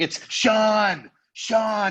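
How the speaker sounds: put-on, very high, loud scream, one word stretched long. Retelling how a player screamed back at his brother-in-law, imitating someone screaming. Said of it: "he starts screaming back at him".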